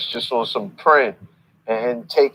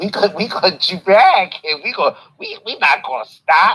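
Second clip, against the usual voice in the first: put-on, high gloating with open glee; 7 semitones higher, 4 dB louder than usual. Speaker acts out a man at the end of the call, mimicking a gleeful voice. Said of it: "You hear the glee in his voice".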